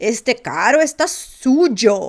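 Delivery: bad, clumsy American accent, very slow and loud. Imitating an American trying to speak Portuguese in Brazil, with a bad American accent. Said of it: "Só que ele tá falando com um sotaque ruim".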